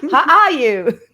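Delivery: put-on very loud, very high-pitched Illinois accent. Retelling how a woman greeted the speaker leaving the office, imitating her Illinois accent. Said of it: "with her good Illinois voice".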